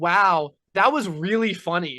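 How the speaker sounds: very slow, loud, drawn-out, insincere sarcastic tone. Imitating Julia, who praises jokes without meaning it: imitating Julia's sarcastic praise. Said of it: "she'll be like".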